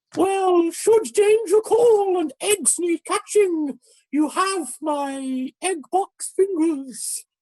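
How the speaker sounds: strange, very high, trilobite-like creature voice. A character answers a companion, in a voice like a trilobite. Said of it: "he says in a voice that is strangely reminiscent of a trilobite".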